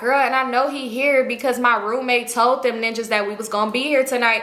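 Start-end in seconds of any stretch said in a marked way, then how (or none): none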